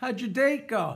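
ordinary talk, nothing marked

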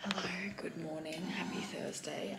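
barely-there, very soft whisper. Greeting vlog viewers in the morning while someone is still asleep, whispering. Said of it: "I'm just whispering because Peter's still asleep".

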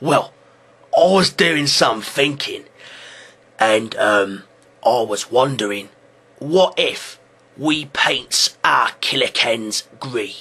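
put-on orc voice. Acting out an orc telling his boss an idea: put-on orc voice. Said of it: "Orc mentality goes something a little bit like this".

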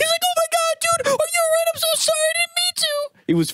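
frantic, very high-pitched, panicked, freaking out. Retelling how Derek reacted after the ball hit: imitating Derek freaking out. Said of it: "Derek was freaking out".

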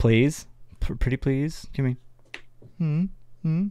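put-on, wheedling, pretty-please begging tone. Asking viewers to like and subscribe, mock pleading. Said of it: "Puppy dog eyes?".

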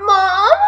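forlorn, sorrowful, mournful little voice. Imitating how someone just called out, mock-sad 'Mom?'. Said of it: "you sounded so sad while saying that. You were just like".

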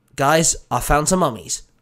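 plain reading voice

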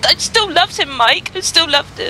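speaking through tears. Susan answers mike after he tells her to stop crying, crying. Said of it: "Susan, stop crying".

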